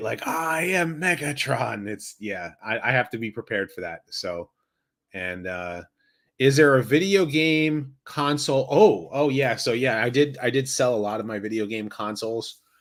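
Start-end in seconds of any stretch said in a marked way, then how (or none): 0.3-1.9 spooky voice pitched a bit higher. Doing the Megatron impression a viewer asked for: Megatron impression. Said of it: "so I can do the Megatron".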